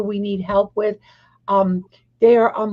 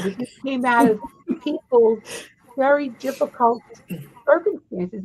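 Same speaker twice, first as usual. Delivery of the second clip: halting, emotional voice catching, breaking mid-phrase; 3 semitones higher than usual. Talking with others, apologizing mid-sentence, getting emotional. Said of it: "now I'm gonna get emotional".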